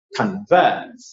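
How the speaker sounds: convert with vert stressed.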